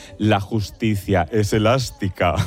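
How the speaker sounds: deep, wicked villain voice. Recalling a line from the series Herederos, doing Concha Velasco's evil villain voice. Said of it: "decía así con voz de muy mala, malísima".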